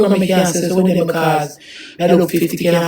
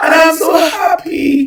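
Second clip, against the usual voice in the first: very high, tearful crying with happiness; 11 semitones higher, 4 dB louder than usual. Explaining tears the day before an anniversary, happy crying. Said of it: "You're so happy and crying".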